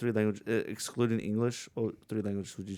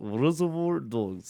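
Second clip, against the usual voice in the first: light, slightly put-on Russian accent; 3 semitones higher than usual. Retelling answering a trivia question: attempted Russian accent. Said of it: "I don't know if that sounds Russian at all".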